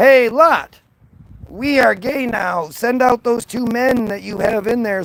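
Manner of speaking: play-acted rowdy crowd hollering and yelling. Retelling a bible story, acting out the townsmen: imitating a yelling mob. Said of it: "where they start yelling".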